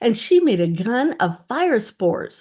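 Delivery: ordinary delivery, nothing marked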